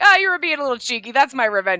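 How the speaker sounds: cheesy delivery, high-pitched and very loud. Imitating how a game character delivers his line: cheesy Ichiya voice. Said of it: "it's just the way Ichiya sounds".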